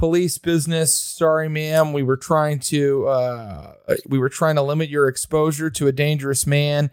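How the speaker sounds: ordinary delivery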